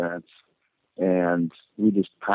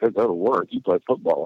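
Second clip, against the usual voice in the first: put-on snickering tone. Retelling how people answered when told about going to work: imitating a snickering remark. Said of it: "they would kinda snicker at me".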